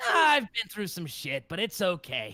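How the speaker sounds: very gruff, rough, swooping voice, pushed further. Demonstrating a take recorded for the character Rocky: gruff Rocky voice. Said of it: "a lot more gruff and a lot rougher".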